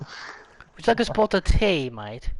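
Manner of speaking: playful fake British accent. Correcting someone else's attempt, the speaker demonstrates a British accent. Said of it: "Tell Blake to do a British accent".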